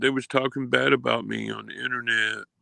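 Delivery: put-on crying voice. Mocking someone who is crying to his mom: imitating Easy crying. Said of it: "he's crying".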